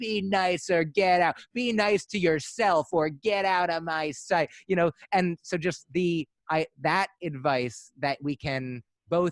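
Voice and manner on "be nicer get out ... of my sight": acted mild scolding tone, half-shouted. Retelling a grandmother's loving reply said in a harsh tone: imitating grandmother yelling. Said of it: "the idea of yelling "be nice" at someone".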